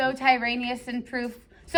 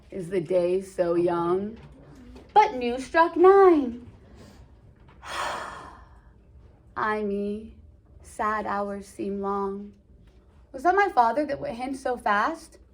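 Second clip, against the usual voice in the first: gloomy, self-pitying, depressed, sighing moan; 2 semitones lower than usual. Reading Romeo's lines aloud from the play: put-on depressed Romeo voice. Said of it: "you're gonna be able to tell by my voice".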